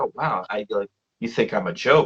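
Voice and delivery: mock sheepish, a little embarrassed and flustered. Retelling a character's reply to being teased: acting out embarrassment. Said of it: "gets kind of a little embarrassed".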